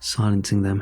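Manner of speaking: plain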